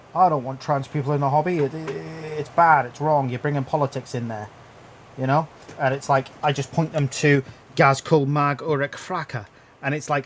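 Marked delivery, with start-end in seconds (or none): none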